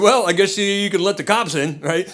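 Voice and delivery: normal talking voice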